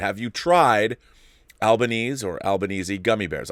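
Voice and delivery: ordinary talk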